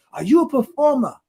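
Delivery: put-on French accent, very high-pitched voice. Quoting the man who grabbed him up, imitating his french accent. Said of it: "he was in his French accent".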